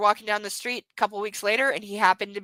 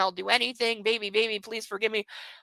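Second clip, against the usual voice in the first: hushed, soft, desperate pleading tone; 5 dB quieter than usual. Retelling what a man said while following her and her child, imitating desperate begging. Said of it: "like literally begging".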